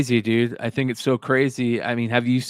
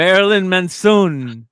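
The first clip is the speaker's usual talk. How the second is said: loud, belted singer voice in Spanish; 7 semitones higher, 6 dB louder than usual. Mimicking how a Spanish-language ad says a name: imitating Spanish announcer pronunciation. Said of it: "I just love how they say it".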